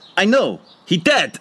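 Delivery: put-on Russian accent, slow and high. After the speaker's sermon, [name] answers; [name]'s line in Russian accent. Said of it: "Do you like my Russian accent?".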